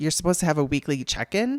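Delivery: hesitant, uncertain tone rising at the end. Retelling a phone call from an oncology scheduler, imitating Sarah's questioning rise. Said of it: "she said it like a question".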